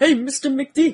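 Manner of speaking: very high, loud cartoon duck voice, called out. A speaker describes a video game level, then does a Launchpad voice. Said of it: "That's my Launchpad voice".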